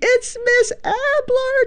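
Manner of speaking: play-acted, very high, thrilled childlike shriek. Retelling how the kids greeted her at the door, retelling kids screaming excitedly. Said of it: "they start just screaming".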